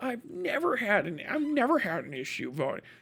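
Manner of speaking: play-acted smug, condescending, talking-down sing-song. Mocking people who lecture others about voting: imitating a smug, condescending tone. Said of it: "smugly and condescendingly say".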